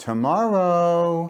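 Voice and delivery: tomorrow hit with strong stress. Showing how emphasis changes a sentence's meaning: strong stress on tomorrow. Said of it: "you can put the emphasis on".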